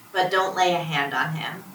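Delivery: ordinary delivery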